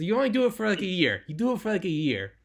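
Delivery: imitated Israeli accent. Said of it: "I can't do an Israeli accent".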